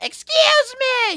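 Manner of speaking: very high-pitched yell. Imitating a wrestling manager yelling her catchphrase: Vickie Guerrero impression. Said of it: "you nailed that fucking Vicky Guerrero fucking impression".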